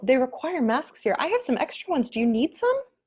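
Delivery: politest, friendliest tone, very high pitched. Retelling offering spare masks to a group without them, retold polite friendly voice. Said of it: "in my politest, most friendly voice".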